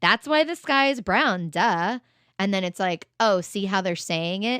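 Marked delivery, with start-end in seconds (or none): 0.0-2.0 loud, obvious, matter-of-fact sarcastic duh tone. Demonstrating a comment meant to convince audiences, sarcastic matter-of-fact tone. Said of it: "a sarcastic, like matter of fact, like tone comment".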